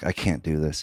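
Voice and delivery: put-on tearful voice, welling up. Retelling breaking down at an audition: imitating his own tearful voice. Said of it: "tearing up".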